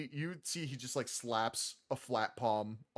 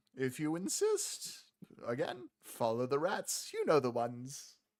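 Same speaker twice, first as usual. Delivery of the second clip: swooping, sing-song voice with widely swinging pitch. Voicing the Rat King, who tells the players to follow the rats: Rat King voice. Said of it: "he goes".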